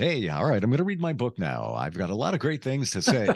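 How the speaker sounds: put-on radio-announcer broadcaster voice. A radio host showing how not to sound on air, fake radio-announcer voice. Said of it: "sounding like a radio person or trying to sound like".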